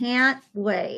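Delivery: bone-dry sarcastic delivery. Answering the announced movie pick for next week's review: sarcastic. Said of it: "She's already getting sarcastic".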